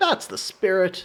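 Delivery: knowing sarcastic tone. Voicing a line from the game's text, sarcastic. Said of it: "I think I'm gonna go sarcastic for that voice".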